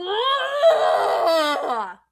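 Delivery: loud, high, muffled cry as if behind walls.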